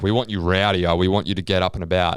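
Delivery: ordinary talk, nothing marked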